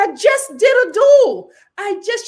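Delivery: put-on very loud, heated, frustrated spazzing rant. Retelling a contestant's reaction after a duel: imitating frustration. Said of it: "She was so frustrated".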